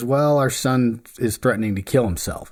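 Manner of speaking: flat, expressionless, dead-level monotone delivery. Retelling how the mom answered what was going on: imitating a monotone delivery. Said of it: "in kind of the most monotone possible way".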